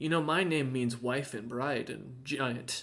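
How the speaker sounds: close, secretive, soft half-whisper. Voicing a character who half-whispers into a player's ear: half-whispering. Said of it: "and whispers into your ear".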